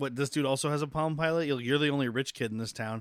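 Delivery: ordinary delivery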